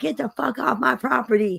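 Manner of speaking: put-on crazy hillbilly voice. Retelling a video of a man yelling at police: imitating a crazy hillbilly. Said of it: "that crazy hillbilly in the cops".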